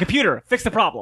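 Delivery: simple, plainly spoken, high-pitched voice. Imagining how Travis would order the computer to fix it: imitating Travis. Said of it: "I just imagine Travis going".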